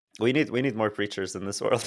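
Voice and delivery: plain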